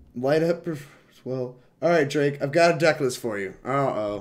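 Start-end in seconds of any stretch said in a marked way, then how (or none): 1.8-3.5 loud, eager, way-too-excited voice. Telling another player about a deck list, excited. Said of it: "you sound way too excited for me to be excited".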